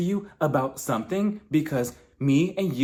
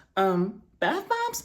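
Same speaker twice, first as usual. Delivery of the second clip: mock-confused tone, much higher pitch; 7 semitones higher than usual. Retelling a confrontation, acting out Whitney's reply, imitating Whitney confused. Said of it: "Whitney was genuinely confused".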